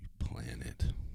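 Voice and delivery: soft whisper.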